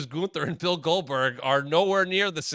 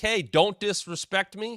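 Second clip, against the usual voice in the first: fired-up, high-pitched, slow, deliberate delivery; 6 semitones higher than usual. Retelling how Miz reacts when provoked: imitating Miz fired up. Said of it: "You get a good Miz fired up".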